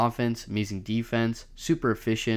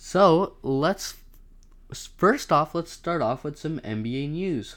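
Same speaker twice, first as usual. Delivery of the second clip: excited voice suddenly jumping up high; 6 semitones higher than usual. Podcast host starting the nba news segment, voice suddenly going high. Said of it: "my voice got really high there for a second".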